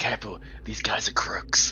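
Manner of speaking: low hushed whisper. A player acts out what they would say to the team: whispering to the team. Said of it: "I'm gonna whisper to the team".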